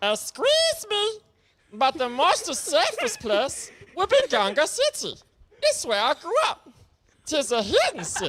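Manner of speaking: very high, swooping, goofy creature voice. Reading a viewer's comment aloud to the audience, in a Jar Jar impression. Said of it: "the Jar Jar impression I'm about to put on".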